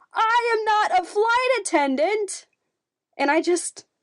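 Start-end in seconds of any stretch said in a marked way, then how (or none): 0.1-2.4 put-on yell, much higher, slower. Retelling going gate after gate, the speaker acts out a woman yelling from afar: retelling a yell. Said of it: "she yelled from twenty feet away".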